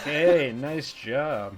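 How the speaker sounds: put-on sarcastic tone of voice. Retelling how praise from Kurt sounds: imitating Kurt sounding sarcastic. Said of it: "it sounds really ironic, like he's being sarcastic".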